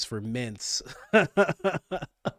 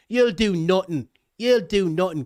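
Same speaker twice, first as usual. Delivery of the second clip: put-on loud pitched-up Irish accent; 5 semitones higher, 5 dB louder than usual. Admitting he can only do one Irish accent: Conor McGregor Irish accent. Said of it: "I can only do Conor McGregor saying".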